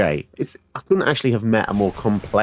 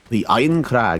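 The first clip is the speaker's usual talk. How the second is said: put-on Scottish accent. Naming the next one aloud during play, in a scottish accent. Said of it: "You cannot say that in a non-Scottish accent".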